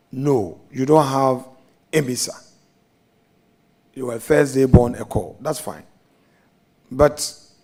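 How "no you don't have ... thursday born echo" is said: normal talking voice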